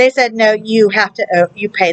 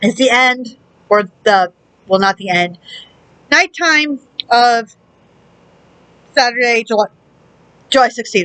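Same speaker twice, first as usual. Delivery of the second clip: speech broken by hiccups. Giving the date while eating noodles: hiccuping while talking. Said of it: "I have the hiccups and I'm burping".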